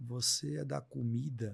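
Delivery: small, slow, choked little voice catching in the throat. Retelling what a weak boy in intensive care asked: imitating a choked-up little voice. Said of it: "com a vozinha bem embargada".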